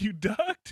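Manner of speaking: put-on outraged, hot-tempered, angry voice. Retelling a movie scene where the character is pissed: imitating angry Randall. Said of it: "and he's pissed".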